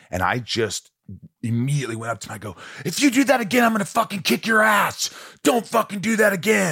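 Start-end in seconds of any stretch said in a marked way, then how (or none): 2.8-6.7 very high, furious, acted-out scream. Retelling confronting someone who kept doing it again: retelling a scream in someone's face. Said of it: "I just screamed in his face".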